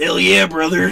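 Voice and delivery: big, loud bellowing voice. Asked to bust out an impersonation after a sip: Hulk Hogan impersonation. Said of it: "bust out that Hulk Hogan impersonation".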